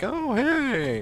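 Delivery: put-on very high-pitched elderly man voice. Imitating a game character, the old guy: imitating the old guy. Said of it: "the old guy".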